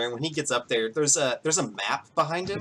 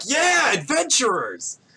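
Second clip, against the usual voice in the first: very high, sing-song, swooping crowd cheering; 11 semitones higher, 4 dB louder than usual. Voicing the townspeople cheering on the adventurers: cheering crowd. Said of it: "just start cheering".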